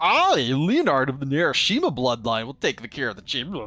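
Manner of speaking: loud, dumb, stupid-sounding voice. Reading a game character's lines aloud, in a stupid Leonard voice. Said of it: "Should I give him a stupid voice?".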